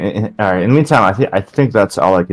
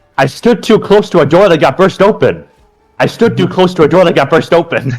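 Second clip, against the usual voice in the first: exasperated, annoyed yell, very high; 10 semitones higher, 4 dB louder than usual. Voicing an annoyed character drawing a staff: annoyed character shouting. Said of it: "he just shouts".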